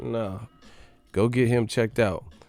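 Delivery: ordinary talk, nothing marked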